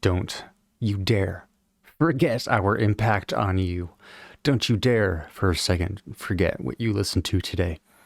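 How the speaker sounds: ordinary talk, nothing marked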